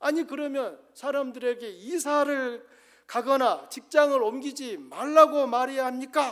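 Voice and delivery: high-pitched, loud, mocking ridicule. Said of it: "하면서 조롱을 했습니다".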